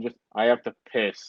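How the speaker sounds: mock dead flat, unvarying, low monotone. Retelling a sudden remark during a talk about nicknames, completely monotone. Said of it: "completely monotone".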